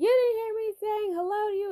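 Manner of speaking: very high-pitched, mocking, put-on old man voice.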